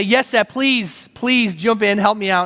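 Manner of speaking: acted-out, frantic, panicked voice. Retelling how they begged a man to jump in and help, retelling a panicked plea. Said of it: "And I'm panicking".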